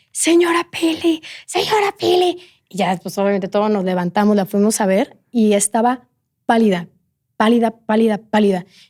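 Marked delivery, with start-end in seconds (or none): 0.1-2.3 put-on higher-pitched scream. Retelling how the nanny woke everyone, imitating someone screaming. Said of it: "empieza a gritar así".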